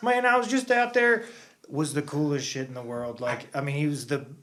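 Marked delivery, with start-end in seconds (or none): 0.0-1.2 loud, very high-pitched, heavy Southern twang. Imitating a motorcycle champion from Kentucky: Nicky Hayden southern accent. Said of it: "a dude with a very, like, southern accent".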